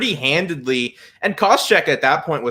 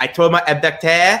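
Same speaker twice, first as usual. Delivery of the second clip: Québécois-French-sounding English; 3 semitones higher, 3 dB louder than usual. Recounting what Georges St-Pierre told his corner during the fight: Georges St-Pierre French Canadian accent. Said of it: "Bonus points for that French Canadian accent".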